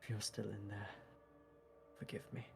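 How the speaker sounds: quiet, muttered character voice. In a role-play scene, looking at the state Porcupine is in: Hazel, quietly under her breath. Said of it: "Hazel's going to say quietly under her breath".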